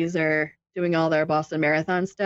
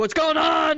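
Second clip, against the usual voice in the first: sudden dad voice, pitched very high; 10 semitones higher than usual. Retelling a video where kids were screaming: Jensen's dad voice. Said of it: "Jensen dad voice came out".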